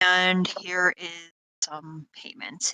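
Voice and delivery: grumpy, reluctant, grudging grumble. Game master voicing the town mayor handing the party payment, grumbling. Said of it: "he's kind of grumbling to himself".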